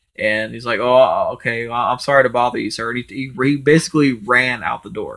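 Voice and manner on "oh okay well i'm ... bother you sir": put-on sad voice, near tears. Retelling how a man apologized and left: imitating someone near tears. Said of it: "like he was about to cry".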